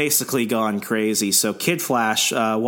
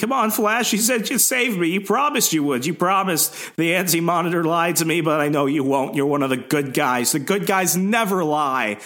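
put-on character scream, much higher pitch; 6 semitones higher than usual. Acting out a comic villain begging the Flash for help, Psycho Pirate screaming. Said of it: "He's screaming".

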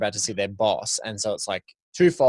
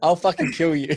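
deadly serious menacing tone, pitched up; 6 semitones higher, 4 dB louder than usual. Describing a favorite scene, quoting Jamie Foxx's Tubbs threatening someone: mock deadly-serious. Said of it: "the turn of his voice, the tone".

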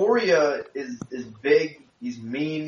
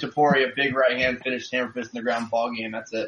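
ordinary talk, nothing marked

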